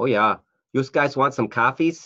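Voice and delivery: put-on Northern Michigan Yooper accent. Explaining Michigan accents, the speaker demonstrates the Northern Michigan Yooper accent. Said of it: "Northern Michigan accent, which is like the Yoopers".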